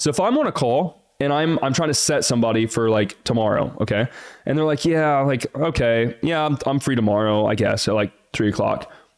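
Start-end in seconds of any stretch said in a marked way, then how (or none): 4.8-8.9 vague, hesitant, wishy-washy noncommittal tone. Acting out someone on a call agreeing to tomorrow: mock wishy-washy, uncommitted tone. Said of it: "I don't like that tonality. That's like wishy-washy. It's like not committed".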